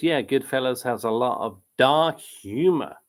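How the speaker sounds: usual speaking voice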